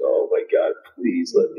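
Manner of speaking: mock near-tears pleading. Recounting being woken after finally falling asleep, acting out near-crying pleading. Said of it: "like I'm damn near like crying".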